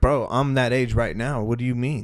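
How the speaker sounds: plain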